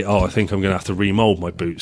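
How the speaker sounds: ordinary delivery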